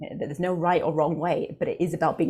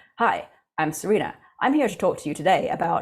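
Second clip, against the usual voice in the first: stiff, professional robot host delivery; 3 dB louder than usual. Talking about public speaking, the speaker demonstrates a stiff professional robot voice. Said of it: "they sort of become a robot, this sort of professional robot".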